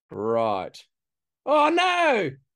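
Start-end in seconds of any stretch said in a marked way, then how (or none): 1.5-2.4 very high-pitched, swooping shouting. On a Zoom call while moving windows to share a screen: yelling. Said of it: "Sorry for yelling".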